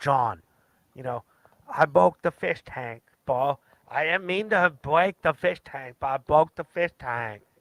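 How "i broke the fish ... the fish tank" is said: genuine, earnest reality-contestant voice. Channeling a competitor from Fish Tank Live: imitating a Fish Tank Live contestant. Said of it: "I'm just trying to channel those people".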